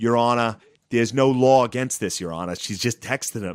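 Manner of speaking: put-on Boston accent. Describing a trial, mimicking the defense attorneys addressing the judge: Boston accent. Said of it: "they all have this like Boston accent".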